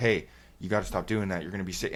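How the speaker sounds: put-on panicking voice. Retelling a doctor's warning on the phone: imitating a panicking doctor. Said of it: "starts kinda panicking on the phone with me".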